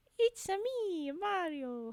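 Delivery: bad, high, lilting sing-song cartoon voice. Trying a voice from memory after doubting it will be good: Mario impression. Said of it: "I don't think this is gonna be very good".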